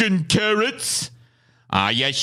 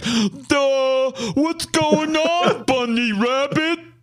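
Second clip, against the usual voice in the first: dumb, dopey cartoon character voice; 3 semitones higher than usual. Acting out a dumb dunce side character: dumb dunce cartoon voice. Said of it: "just some dumb dunce".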